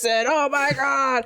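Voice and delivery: loud, high, weird voice. Describing a web short about dinosaurs in an office, imitating their weird Dinosaur Office voice. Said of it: "they all talk like this".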